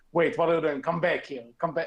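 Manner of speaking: ordinary talk, nothing marked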